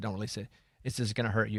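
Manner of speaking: ordinary talk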